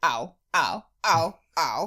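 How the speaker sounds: cartoon character voice with a string of ows. Asked to impersonate a character from the episode: Lumpy impression. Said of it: "I'm going to just do Lumpy".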